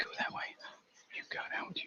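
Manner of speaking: quiet, soft, hushed whisper under the breath. Coaxing the little ones into place, the speaker is whispering. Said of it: "I don't know why I'm whispering".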